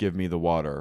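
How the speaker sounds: put-on commanding voice. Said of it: "speaking in The Voice from Dune".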